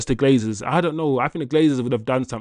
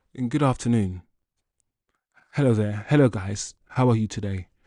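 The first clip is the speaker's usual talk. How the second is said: careful, precise, code-switched work voice; 3 semitones lower, 4 dB quieter than usual. Switching into the voice used for work meetings: slow, precise work voice. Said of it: "my work voice. Let me my code switch voice. ... I slow my voice down. I talk with more precision".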